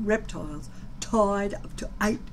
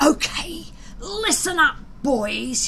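whispering with menace, threatening; 6 semitones higher, 4 dB louder than usual. He pushes a rival aside and addresses the boys: menacing whisper. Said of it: "he whispered in a menacing fashion".

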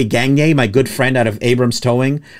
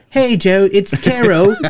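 put-on, pitched-up English accent; 7 semitones higher than usual. Retelling a call from a TV network, the speaker imitates Caro's English accent. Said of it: "She had an English accent".

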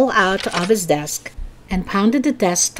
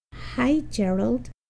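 small, meek, tiny voice, soft and high; 5 semitones higher, 8 dB quieter than usual. Narrator reads a character's greeting after an uncomfortable pause, in a tiny voice. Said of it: "Phoebe said in a tiny voice".

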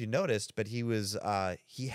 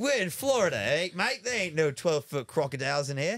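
put-on Australian accent, pitched up; 7 semitones higher, 4 dB louder than usual. Acting out what some australian guy would say, australian accent. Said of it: "We're really good at those Australian accents".

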